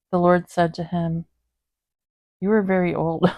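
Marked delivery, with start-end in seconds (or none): 2.4-3.3 cracking up, speaking through laughter. Reading a bible passage aloud, laughing while reading. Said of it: "I'm laughing at that".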